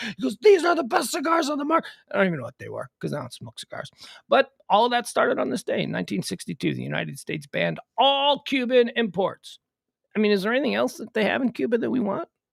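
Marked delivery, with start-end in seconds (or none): 0.4-1.9 upset rant, higher pitch. Retelling a guy's reply when asked why his cigars weren't Cuban: imitating someone upset. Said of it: "And he got real upset".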